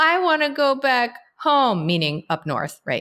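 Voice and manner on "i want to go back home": put-on tearful child voice, higher. Retelling a daughter's words at bedtime as she cries: imitating a crying child. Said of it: "she just starts crying".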